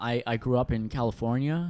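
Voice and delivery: put-on plain, standard general American accent. Conversing with the hosts in character, saying where he grew up, in a standard american accent. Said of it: "just a standard American accent".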